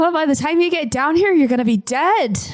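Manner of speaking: calling out loudly. Teasing an old man upstairs, yelling back up the stairs. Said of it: "yell back up".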